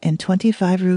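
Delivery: ordinary delivery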